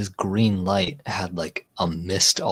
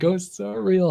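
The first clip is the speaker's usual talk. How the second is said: acted very high, wavering voice about to cry; 12 semitones higher than usual. Retelling a ghostly knock, imitating own voice on the verge of tears. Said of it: "I was like".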